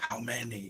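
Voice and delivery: soft, very quiet, hushed half-whisper. Playing a character hiding behind boulders, asking how many: half-whispered, hushed tone. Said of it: "ask in a whispered, uh, hushed tone".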